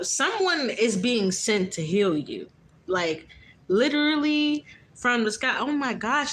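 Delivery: slow, near-crying voice, welling up. Reading a message aloud to listeners, on the verge of tears. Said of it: "it's like I'm about to start crying".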